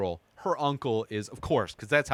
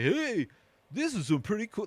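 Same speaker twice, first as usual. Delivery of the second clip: very high, bad New York tough-kid voice; 9 semitones higher than usual. Retelling a bad actor's line in a movie: imitating a tough kid with new york vernacular. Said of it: "trying to act like a tough homeless kid".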